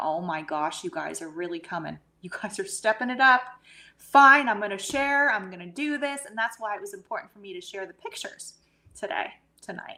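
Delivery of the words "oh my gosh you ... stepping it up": put-on bawling, crying through the words. Retelling own past words when the orbs appeared: retelling own crying. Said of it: "I just started bawling".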